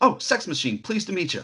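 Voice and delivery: put-on offhand, easygoing manner. Retelling how a movie character introduces himself: imitating Sex Machine, nonchalant. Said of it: "Just so nonchalantly".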